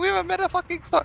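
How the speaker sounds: high, squeaky, mocking voice. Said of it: "I was like".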